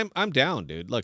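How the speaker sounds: ordinary talk, nothing marked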